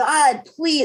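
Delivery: mock crying, tearful, high pleading. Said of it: "And I would just cry and cry".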